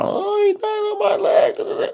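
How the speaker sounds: acted, very high-pitched woman's scream. Retelling an incident at a Dollar Tree, acting out the woman's scream. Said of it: "she's screaming at her".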